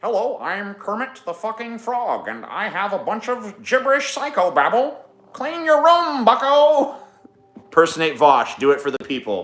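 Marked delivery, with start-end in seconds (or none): 0.0-6.9 badly squeaked out, very high pitch. Doing a requested terrible impression: Jordan Peterson impression. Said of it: "Jordan Peterson".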